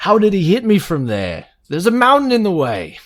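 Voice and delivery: very high, loud, animated, swooping put-on voice. Doing an impersonation of a co-host's recent line in a party: Vincent Smalls impression. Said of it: "my best Vincent Smalls impression".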